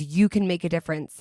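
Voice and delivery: ordinary talk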